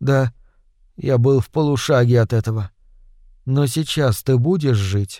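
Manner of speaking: ordinary delivery, nothing marked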